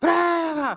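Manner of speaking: loud, high-pitched shout.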